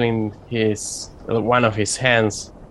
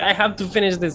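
high, frantic, distracted brush-off tone. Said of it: "and he's like".

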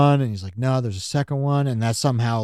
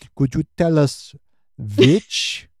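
over-the-top German villain voice, higher; 4 semitones higher than usual. Retelling a character's line over tea: super German villain voice. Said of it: "super villain, super German villain".

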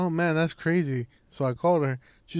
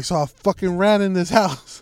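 alarmed, shouty all-caps freakout outburst; 2 semitones higher, 4 dB louder than usual. Retelling a text the sister sent in all capitals: imitating sister's all-caps text. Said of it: "so I gotta, you know, put in her voice".

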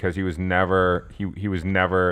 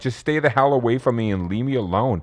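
put-on tearful crying voice, higher pitch; 4 semitones higher than usual. Retelling a movie scene where a character cries at the gates: imitating someone crying. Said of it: "she comes to the gates and she's crying".

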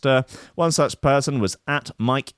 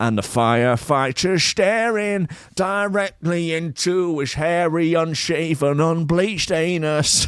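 put-on higher Manchester accent; 5 semitones higher than usual. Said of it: "kind of [name] Manchester accent".

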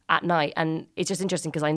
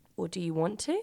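mock flirty, coy, teasing, coquettish tone; 2 semitones higher, 6 dB quieter than usual. Retelling how she answers him over her shoulder, put-on coquettish tone. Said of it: "she sort of coquettishly over her shoulder is like".

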